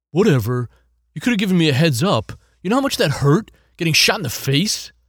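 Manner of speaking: groggy, dazed, annoyed, loud grumbling. At the bar, a man answers the one who just paid him back, groggy. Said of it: "[name] jerked up from his recliner, / [name] jerked up from his recliner, / groggy".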